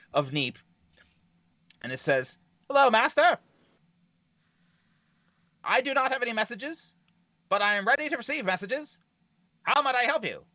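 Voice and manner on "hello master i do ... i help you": very high-pitched nineteen-twenties newsman voice. Storyteller voicing the thing that settles in front of Neep, 1920s newspaper reporter voice. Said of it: "like a nineteen twenties reporter calling in the big".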